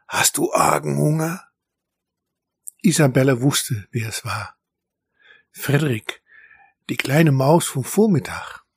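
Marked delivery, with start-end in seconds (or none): 0.1-1.4 close, intimate whispering. Narrator reads a little mouse's question to a hungry animal: whispering in her ear. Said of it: "eine Stimme in ihr Ohr flüstern".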